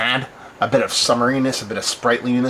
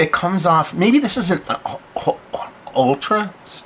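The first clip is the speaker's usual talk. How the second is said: slow, halting, slightly high stutter with broken-up words; 6 semitones higher than usual. Describing the taste of a drink, stuttering. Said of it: "sorry for stuttering".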